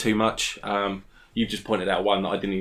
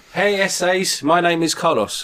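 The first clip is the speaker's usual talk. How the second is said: put-on heavy, thick Mexican accent, loud and pitched way up; 9 semitones higher, 7 dB louder than usual. Introducing a costumed podcast character: Carlos, thick Mexican accent. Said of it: "your accent's too thick".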